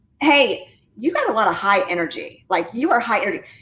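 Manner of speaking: normal talking voice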